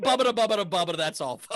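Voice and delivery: put-on stuttering cartoon pig voice. Showing how a Porky Pig impression should sound: Porky Pig impression. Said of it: "the worst Porky Pig of all time".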